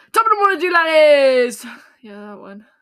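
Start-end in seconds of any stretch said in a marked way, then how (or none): 0.1-1.6 very loud, high, belted channel intro voice. Told to try Irish, attempt an intro you have half forgotten, in a Jacksepticeye intro impression. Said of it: "trying to think of the Jacksepticeye intro".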